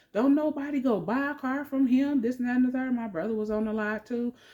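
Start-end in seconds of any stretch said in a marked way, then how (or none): 0.2-3.0 hysterical, furious, high, angry shouting. Retelling yelling out in a car lot in front of customers, re-enacting angry yelling. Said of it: "so I'm yelling out".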